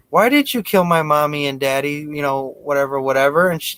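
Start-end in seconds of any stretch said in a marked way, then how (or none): 0.1-2.0 put-on pull-string talking toy doll voice. Retelling a story where a cop pulls a doll's string: imitating a talking doll. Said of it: "the fucking doll was like".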